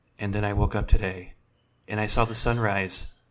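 put-on calm weekend public radio announcer delivery. Doing an impression of a weekend radio broadcast: NPR weekend broadcast voice. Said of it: "Here is my impression of a NPR broadcast on a weekend".

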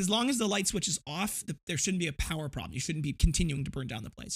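ordinary delivery

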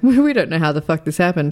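ordinary delivery

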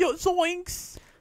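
very high, squeaky cartoon sidekick voice. Imitating Shaggy while discussing whether he ever laughs: Shaggy voice. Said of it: "He's like".

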